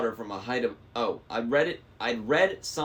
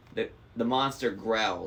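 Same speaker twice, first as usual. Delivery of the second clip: plain reading voice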